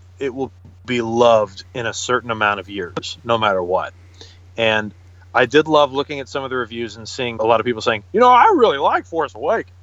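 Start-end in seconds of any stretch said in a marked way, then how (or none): 8.1-9.6 very high movie-review voice, swooping all over. Reading a review aloud: Jimmy Stewart review voice. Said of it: "I like your review voice".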